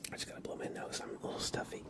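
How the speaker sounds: soft whispered voice.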